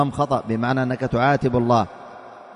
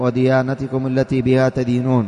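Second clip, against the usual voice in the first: ordinary talk, nothing marked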